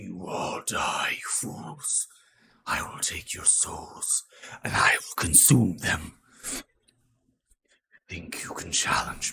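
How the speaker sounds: eerie, dark, ethereal voice, loud and breathy. Narrating a scene, voicing the voice that emanates from the body, dark and ethereal. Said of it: "this dark, ethereal voice".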